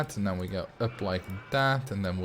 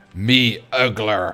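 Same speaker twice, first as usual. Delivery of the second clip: joking mock caveman voice, lower; 4 semitones lower, 3 dB louder than usual. Joking about a made-up word, saying it in a joking caveman voice. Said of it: "Ugler sounds like a caveman word".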